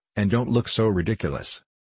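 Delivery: plain reading voice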